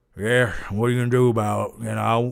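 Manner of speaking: put-on deep, low, pretentious try-hard voice. Explaining why you can't take an actor seriously, do his pretentious try-hard Austin Butler voice. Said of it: "that pretentious try hard voice".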